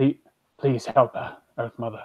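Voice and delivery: soft mutter under the breath. Voicing a character praying while running towards a spider, under his breath. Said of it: "under his breath".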